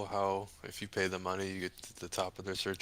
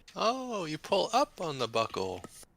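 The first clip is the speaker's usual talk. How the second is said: very high, swooping, swinging comedian-style voice; 9 semitones higher, 5 dB louder than usual. Taking a turn at a Seinfeld impression: Jerry Seinfeld impression. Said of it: "Jerry Seinfeld?".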